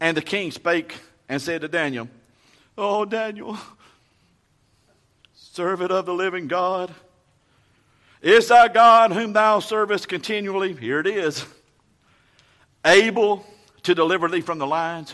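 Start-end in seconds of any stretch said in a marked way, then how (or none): 2.8-15.1 grief-heavy, mournful, lamenting cry. Demonstrating the king calling out to Daniel: lamentable voice. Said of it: "a lamentable voice is, don't you? I'll just demonstrate it for you".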